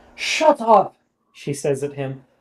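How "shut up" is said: put-on Irish accent, higher and louder. Voicing a character who tells another to shut up: irish accent. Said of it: "I need to try to use my Irish accent".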